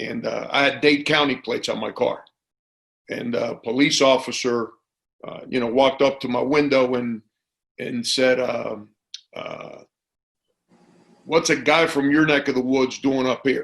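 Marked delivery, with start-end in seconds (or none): 11.2-13.6 put-on snide needling, heavily sarcastic. Retelling what a police officer said at his car window, imitating a sarcastic officer. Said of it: "And real sarcastically".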